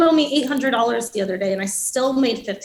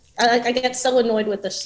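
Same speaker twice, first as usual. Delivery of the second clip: usual speaking voice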